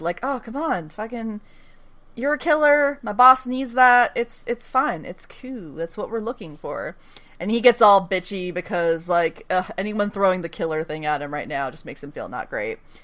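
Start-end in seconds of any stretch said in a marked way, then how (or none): none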